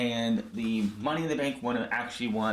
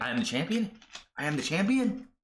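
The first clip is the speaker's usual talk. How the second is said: put-on stunned, high, shocked disbelief; 6 semitones higher than usual. Recapping a wrestling show, acting out Asuka hearing she is champion, imitating shocked disbelief. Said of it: "Asuka is shocked".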